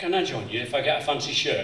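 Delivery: ordinary talk, nothing marked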